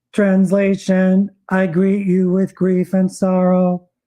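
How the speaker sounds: flat robotic machine-voice monotone. In a skit about friends Dave and Sarah, the translating voice speaks robotically. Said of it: "overlaid by a robotic voice translating the truth".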